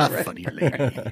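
put-on muttering under the breath. Retelling how someone reacted to a Lily Tomlin movie, muttering under his breath. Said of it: "Sort of under his breath".

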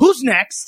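acted-out, stern, high-pitched scolding. Retelling how one of the judges came out to the comedians: imitating a judge scolding. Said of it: "comes out and scolds a".

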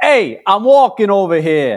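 put-on Brooklyn New York accent. Asked for an authentic New York accent, giving a classic line in a New York accent. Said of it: "please give us an authentic New York".

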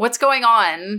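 shouting in a character voice. Playing a character who storms in and yells at Constantina: yelling in character.

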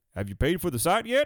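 put-on Texas accent, a bit high. Retelling what a texas guy asked when he came up, in a texas accent. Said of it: "he's some Texas guy".

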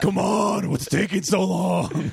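put-on impatient superhero voice. Joking about a comedy character, speaking as Impatient Batman voice. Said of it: "given how we've established that Impatient Batman".

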